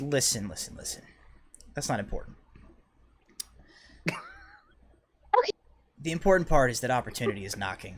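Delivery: secretive, hushed, conspiratorial whisper. Retelling what a man told them, acting out a conspiratorial whisper. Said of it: "in this like conspiratorial whisper".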